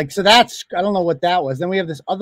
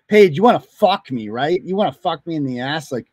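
creepy, weird, skin-crawling tone. Mocking another speaker's come-ons: imitating creepy come-on talk. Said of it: "this is fucking weird and creepy".

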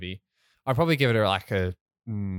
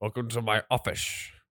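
put-on Scottish actor voice, quieter; 4 dB quieter than usual. Showing another speaker how someone speaks: Sean Connery impression. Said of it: "he speaks like this".

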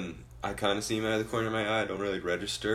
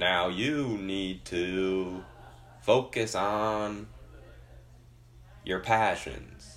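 slow, deep Southern drawl, drawn-out to. Imitating the speaker at a cousin's graduation, in a slow deep-South accent. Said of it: "the slowest talker. And he had, like, a deep South accent".

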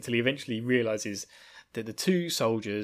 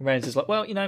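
ordinary delivery

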